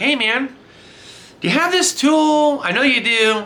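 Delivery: high-pitched sarcastic delivery.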